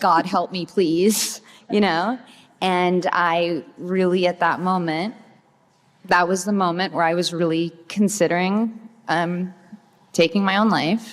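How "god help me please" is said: put-on tearful, sobbing, desperate pleading cry. Retelling sobbing while out walking: imitating own past crying plea. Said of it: "crying out".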